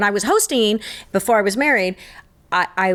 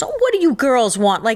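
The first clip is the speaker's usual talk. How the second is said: put-on condescending, patronizing tone, higher; 5 semitones higher than usual. Retelling a waiter speaking to old ladies: imitating a condescending waiter. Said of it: "you think it's, like, condescending?".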